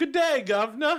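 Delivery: very high-pitched, put-on British accent. Proposing to go to england and take their acting jobs, fake british accent. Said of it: "We'll do a British accent".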